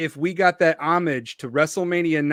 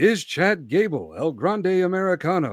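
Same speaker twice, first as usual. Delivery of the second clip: ominous mystery-show host voice. Performing his Unsolved Wrestling Mysteries bit, in a Robert Stack impression. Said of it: "It's my Robert Stack impression".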